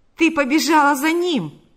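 heated, angry, high and loud. Panas, angered by her words and laughter, confronts her with an angry exclamation. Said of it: "воскликнул Панас".

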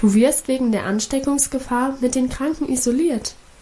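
ordinary delivery

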